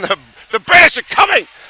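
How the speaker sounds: very loud, shrill, high-pitched yell. Speaking to listeners about tomorrow's final day, yelling. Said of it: "Sorry for yelling that in".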